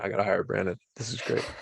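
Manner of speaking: half-whispered under the breath. Mid-conversation aside that the speaker admits may not reach the mic, half-whispering. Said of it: "I'm whispering".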